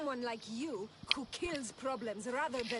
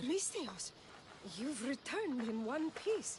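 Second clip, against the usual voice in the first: surprised, taken-aback tone. A character greets alexios as he returns, sounding surprised. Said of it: "Why does she sound surprised?".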